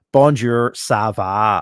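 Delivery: French spoken with a Northern Irish accent. Speaker, who did French GCSE, shows French in a Northern Ireland accent. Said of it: "in a Northern Ireland accent".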